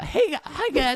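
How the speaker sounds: meek, timid, squeaky, very high voice. Acting out a substitute teacher's first words: imitating a timid substitute teacher. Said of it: "if the first thing they say sounds like".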